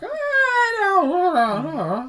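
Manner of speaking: very high, slow, loud, swooping, each ah stretched. Retelling a wrestling promo, imitating Roddy Piper's mumbling talk. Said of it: "Just talking like".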